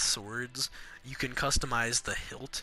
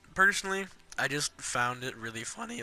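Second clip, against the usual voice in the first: voice breaking mid-sentence; 2 semitones higher than usual. Giving opinions on a game's characters, the speaker's voice cracks. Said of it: "I just had the world's worst voice crack".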